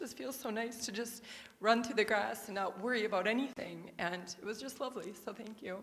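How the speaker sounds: tearful, high-pitched crying through the words. Participant thanking the group after sharing an experience, crying while speaking. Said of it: "I don't know why I'm crying".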